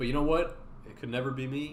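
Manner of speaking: ordinary talk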